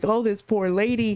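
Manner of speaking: words spoken through tears, tearful and crying. Retelling a call to Mike about a caller: imitating own past crying. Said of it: "I'm telling him and I'm crying".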